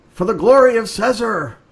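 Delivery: very high, loud, gurgling gargled scream. Questioned by Carl and panicked for a moment, Deputy Dog shouts out in a gargled scream. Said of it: "shouts out in sort of this gargled scream".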